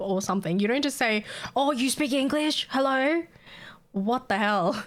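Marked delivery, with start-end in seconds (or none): 1.5-3.2 openly rude tone with pitched-up voice. Retelling how customers spoke: imitating a rude customer. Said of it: "That's so fucking rude".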